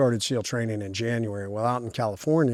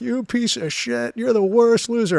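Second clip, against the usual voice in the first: shrill, very high, furious drill-instructor scream; 13 semitones higher, 6 dB louder than usual. Speaker retells a man screaming at him in the shower, imitating him screaming. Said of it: "he's screaming at me the whole time".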